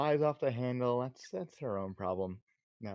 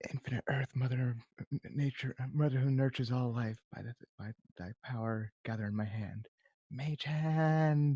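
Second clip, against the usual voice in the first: whispering under her breath. Voicing a character casting a spell in secret: whispering under her breath. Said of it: "was whispering under her breath".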